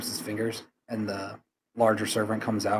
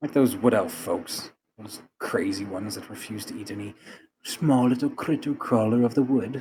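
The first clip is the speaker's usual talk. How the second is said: openly scornful, mocking, derisive tone. Speaking as a character in a scene, mocking. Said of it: "He says mockingly".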